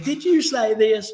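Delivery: pointed, direct, straight delivery. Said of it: "you know how [name] is talking to you".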